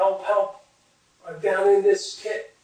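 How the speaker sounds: play-acted, high, loud screaming cry. Retelling a story of a man in a pit: retelling a scream for help. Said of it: "starts screaming".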